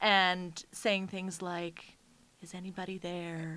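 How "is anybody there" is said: put-on quiet, spooky wavering voice, quieter. Retelling calling out to ghosts in a dark basement: imitating a quiet, spooky wavering voice. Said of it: "with the little bit of the ghostly, spooky waver to your voice".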